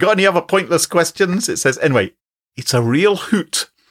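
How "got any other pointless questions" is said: higher-pitched mock Glaswegian accent. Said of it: "Could you freelance a Glaswegian accent for us?".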